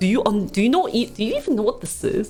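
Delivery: put-on rude, condescending tone. Retelling how the MC talked down to elders: imitating a rude condescending tone. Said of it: "He said it in that tone".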